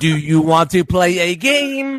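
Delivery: slow, mechanical computer-speech voice. Showing how a speech computer talked: Stephen Hawking voice. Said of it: "it talked like that".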